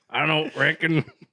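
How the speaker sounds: put-on Arkansas accent character voice. Quoting a movie line about a mower: Sling Blade voice. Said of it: "I'm picturing Sling Blade".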